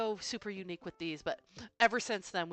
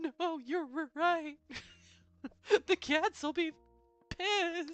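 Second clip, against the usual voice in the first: put-on sobbing crying, higher pitch; 10 semitones higher than usual.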